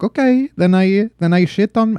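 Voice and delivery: vague, loose put-on pan-European accent.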